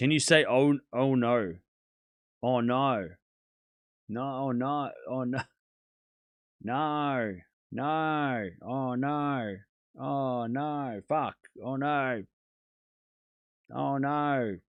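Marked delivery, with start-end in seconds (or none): 11.6-14.6 attempted put-on Australian accent. A streamer asking chat if they sound australian enough now, attempted australian accent. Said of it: "Now do I sound Australian?".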